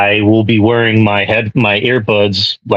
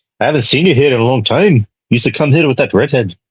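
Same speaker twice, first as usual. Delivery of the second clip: poorly put-on Scottish or Irish accent; 4 semitones higher than usual. Retelling a scene where someone greets the hero, in a bad Scottish or Irish accent. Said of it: "That was a bad accent".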